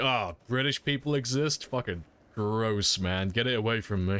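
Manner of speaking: purely disgusted tone. Retelling what a player in a game lobby said: imitating a disgusted tone. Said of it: "He sounded, like, purely disgusted with my presence".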